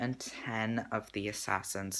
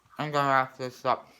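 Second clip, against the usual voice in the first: talking while eating, mouth full. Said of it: "I shouldn't talk when I'm eating".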